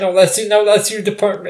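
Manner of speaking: ordinary talk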